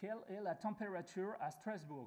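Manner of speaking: very strong British accent. Speaking french with a very strong accent: very strong british accent. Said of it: "je vais parler français, mais avec un, un accent très très fort".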